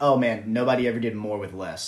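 mock-joking voice. Speaker quoting what someone said once his playing days were done, retelling a joking remark. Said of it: "he like jokingly said".

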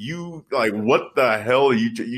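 ordinary talk, nothing marked

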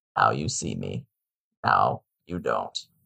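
very low, slow, creaky, drawn-out voice. Answering friends who asked for the impression: Morgan Freeman voice. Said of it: "but in the Morgan Freeman voice".

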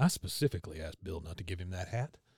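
low, quiet mutter, half to oneself. Retelling a scene where a character complains: imitating a mutter. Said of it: "Hank just kinda mutters".

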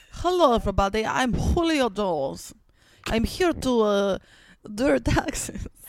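put-on mishmash of Mexican and Persian accents. Pretending to be the football player Julio Jones introducing himself: put-on mixed foreign accent. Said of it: "That was like a Mexican, Persian".

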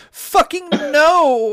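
very high shrill yell, "no" stretched out. A narrator reads a woman leaping in front of an Allosaurus, shouting. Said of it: "She shouted and leapt in front".

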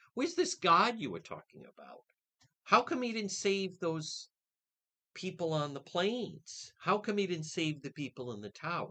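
high-pitched taunting, mocking voice. Acting out a series questioning where God was on 9/11, in a mocking tone. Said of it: "It's like a mocking tone".

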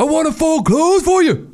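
high, put-on insecure voice, mocking in tone.

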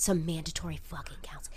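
quiet, hushed whisper. Telling a side story into the microphone: whispering into the mic. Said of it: "I'm whispering into the microphone".

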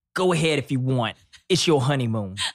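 Italian-American inflected delivery. Retelling a honeymoon story, the speaker voices Joe's reply in an American Italian accent. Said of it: "That's my American Italian accent".

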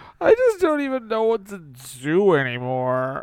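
fake crying, whining. Playing Peter Parker after being told to stop crying: fake crying as Peter Parker. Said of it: "Stop crying".

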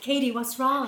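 put-on speaking in American accent. Retelling what he said to Katie, done in an American accent. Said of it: "I want to do it in American accent".

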